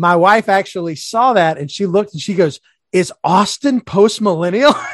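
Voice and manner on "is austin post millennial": mock-excited tone, slower pace. Retelling the speaker's wife's question when she saw it, imitating her excitement. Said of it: "She was like excited".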